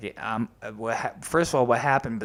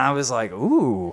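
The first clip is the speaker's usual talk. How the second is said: ordinary delivery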